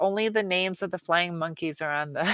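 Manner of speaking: plain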